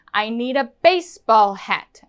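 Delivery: stress placed on the word baseball. Teaching stress on new information, with stress on baseball. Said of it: "our intonation and our stress is going here on the new information".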